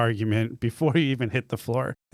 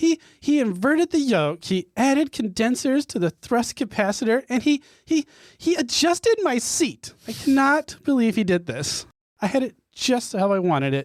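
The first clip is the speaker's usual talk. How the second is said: furious gnome character voice, higher pitch; 11 semitones higher than usual. Voicing a gnome character who storms off: angry gnome character storming off. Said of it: "And then she storms off".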